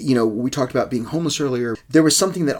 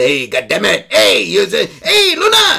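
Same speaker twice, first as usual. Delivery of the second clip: slow, rough, drawn-out, swooping dad voice; 7 semitones higher, 7 dB louder than usual. Showing how dad talks, imitating dad's way of talking. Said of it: "my dad also talks like this".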